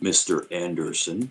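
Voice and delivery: deep, dropped, low voice. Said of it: "he talks like this".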